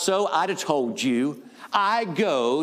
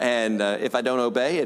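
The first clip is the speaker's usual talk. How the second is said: normal talking voice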